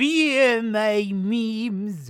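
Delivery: Mongolian-sounding accent. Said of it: "doing this Mongol accent".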